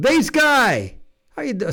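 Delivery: very high, sudden, swooping loud shout. Greeting a buddy by name: shouting into the mic. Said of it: "sorry, I shouted into the, uh, mic".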